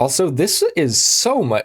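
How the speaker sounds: high, slow voice crack breaking upward. Video maker talking about planning a speech: voice crack. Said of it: "what a voice crack".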